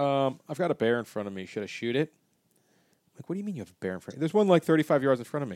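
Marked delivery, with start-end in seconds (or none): none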